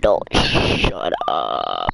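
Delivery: very low, slow character voice. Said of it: "my Venom voice is way better".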